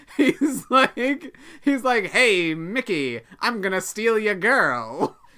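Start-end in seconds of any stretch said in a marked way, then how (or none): 2.1-5.1 put-on old-time 1930s newsreel announcer voice. Describing a cartoon character's new voice, the speaker quotes him: 1930s newsreel voice. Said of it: "he has this like 1930s like newsreel voice now".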